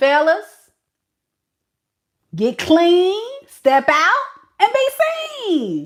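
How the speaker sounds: high, loud, sarcastic mock yell.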